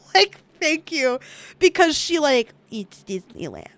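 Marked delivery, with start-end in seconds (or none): 2.7-3.6 put-on muttering under breath, much quieter. Retelling what a woman said to a man, imitating her muttering under her breath. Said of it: "under her breath".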